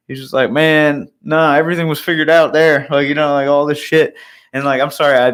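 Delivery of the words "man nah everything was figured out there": put-on Southern drawl, higher. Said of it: "he had this, like, Southern drawl".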